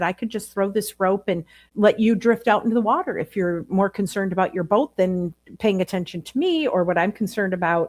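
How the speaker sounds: plain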